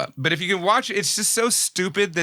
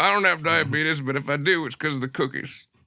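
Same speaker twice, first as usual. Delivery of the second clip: put-on Southern gentleman voice. Joking that Santa is Wilford Brimley: Wilford Brimley voice. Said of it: "Why is he a Southern gentleman?".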